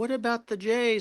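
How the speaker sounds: timid, soft, high tone.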